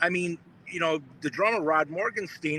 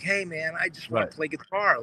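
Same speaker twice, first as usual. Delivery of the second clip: put-on sweet kid-like voice. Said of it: "he spoke like a little kid".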